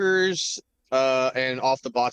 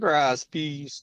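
put-on Jamaican accent; 3 semitones higher than usual. Repeating a suggested place to go, answer in a put-on jamaican accent. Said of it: "putting on a Jamaican accent".

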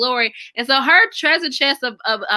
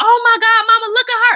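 mock shrill, very high, loud, excited child's outburst; 11 semitones higher, 5 dB louder than usual. Retelling a niece's reaction at Target: imitating a loud excited exclamation.

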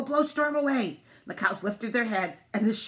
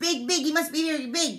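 high, flustered, spluttering burst of words; 6 semitones higher than usual. Narrator reads the duck's line as it flaps into the air, sputtering. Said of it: "Duck sputtered".

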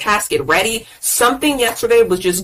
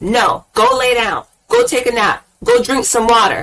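voice rising louder. Telling viewers to rest instead of pushing through when tired: getting loud. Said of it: "why I'm getting loud".

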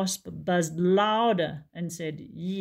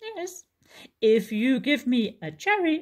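squeaky, squeaking little woodland squirrel voice; 6 semitones higher than usual. Narrator reading a story, voicing the squirrel's reply to Barney, squeaky squirrel voice. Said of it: "the squirrel squeaked and said".

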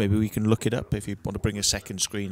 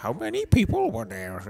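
not-very-good character voice with swooping pitch; 3 semitones higher than usual. Asking a follow-up question in the conversation, in a Yoda voice. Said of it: "In a Yoda voice, or not very good Yoda voice".

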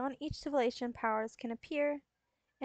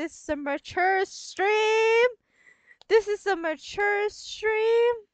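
very loud, high-pitched, repeated shouting; 8 semitones higher, 9 dB louder than usual. On stream, reacting to a fellow streamer's remark, yelling. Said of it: "I'm gonna keep yelling that".

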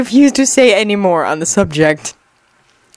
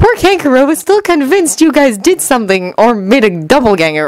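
ordinary delivery, nothing marked

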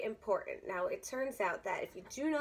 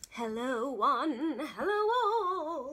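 eerie, very slow, spooky, every word stretched; 4 semitones higher, 4 dB louder than usual. Host greeting the audience at the start, spooky greeting. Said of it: "I don't know why I'm greeting you so spookily".

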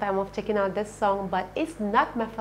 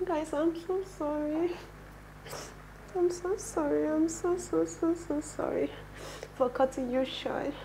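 tearful crying, much higher pitch; 8 semitones higher, 5 dB quieter than usual. Apologizing to the guys for cutting them short, while crying. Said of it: "The reason why I'm crying".

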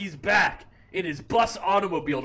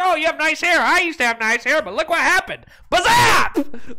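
put-on old man's voice, high and raised; 8 semitones higher, 6 dB louder than usual. Retelling a friend's story about an old customer at night: imitating an old man. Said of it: "this old guy goes in and he's just like".

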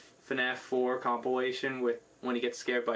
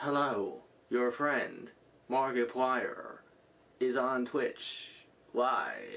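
mechanical robot voice. Speaker recalling a scary games video, imitating Markiplier's robot voice. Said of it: "the robot voice".

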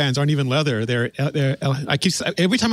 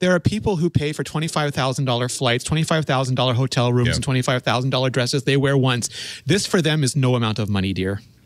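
normal talking voice

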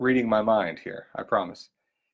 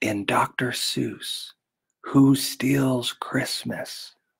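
hushed, secretive whisper. Asking a quiz question so Dayton can't hear: whispering. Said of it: "I'm whispering so Dayton can't hear me".

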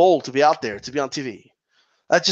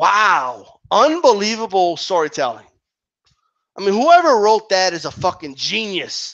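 mocking, sneering sarcasm with drawn-out "wow"; 3 semitones higher than usual. Judging the storytelling of a segment just described: sarcastic. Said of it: "fucking sarcasm in my voice".

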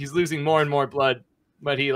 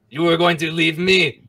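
loud, fake French-accented voice; 3 semitones higher, 6 dB louder than usual. Voicing the pet shop owner confronting a player: French accent. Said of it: "that's French".

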